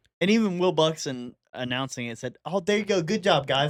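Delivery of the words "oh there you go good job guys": put-on high, encouraging kid-talk, like praising small kids. Retelling what the race announcer said: imitating Will Buxton talking to kids. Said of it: "like, talking to kids".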